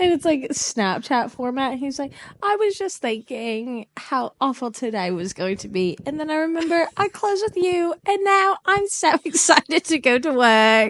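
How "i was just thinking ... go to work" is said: put-on British accent, British guy voice. Retelling a Snapchat video where a boss talks to Tilly, British guy voice. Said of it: "it's like this British guy".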